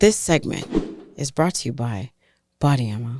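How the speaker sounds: fake seductive, halting, put-on sultry voice. Reading a sponsor line for Body Ammo in a put-on sexy voice. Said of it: "You're trying to sound all sexy".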